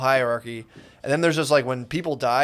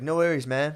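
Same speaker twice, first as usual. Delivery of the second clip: put-on West Coast speech. Imitating how people on the West Coast say a phrase: West Coast accent. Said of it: "There's a very West Coast".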